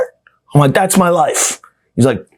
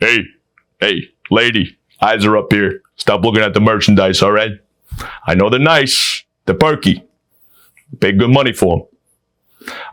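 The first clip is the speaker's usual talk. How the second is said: put-on extra manly voice, lower pitch; 5 semitones lower than usual. Speaker showing how his voice would sound after surgery, put-on manly voice. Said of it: "I'll make it more manly".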